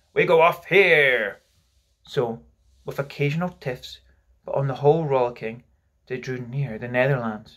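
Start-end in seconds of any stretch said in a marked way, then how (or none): 0.2-1.4 loud, very slow, drawn-out, commanding captain's call. Narrator reading Peter, tired of sleeping, crying out in captain's voice. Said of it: "he would cry in his captain's voice".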